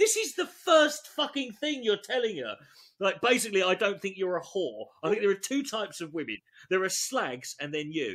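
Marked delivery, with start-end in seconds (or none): none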